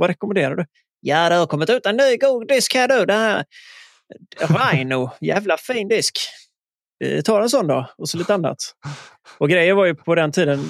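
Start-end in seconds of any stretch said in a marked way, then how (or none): 1.0-7.9 put-on southern Swedish Scanian accent. Retelling phoning to order a new disc: imitating Mats, broad Scanian accent. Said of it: "på god skånska".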